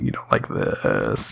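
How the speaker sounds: breathy, crackling, creaky vocal fry. Showing how they used to talk with vocal fry. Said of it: "how do you do voice fry?".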